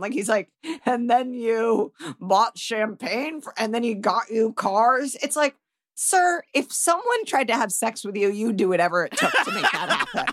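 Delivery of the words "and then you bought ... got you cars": play-acted snide, taunting, belittling mocking tone. Retelling how a police officer spoke to two women: imitating a mocking tone. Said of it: "fully mocking them".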